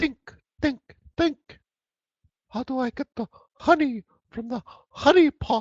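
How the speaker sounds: very high, squeaky cartoon bear voice. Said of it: "like Winnie the Pooh".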